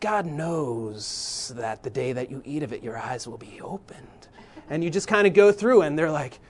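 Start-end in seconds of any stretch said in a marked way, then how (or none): 0.0-4.1 soft hissing snake voice, s's and "knows" stretched. Reading the serpent's words to the woman for his young boys: snake voice, drawn-out S's. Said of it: "draw out your S's".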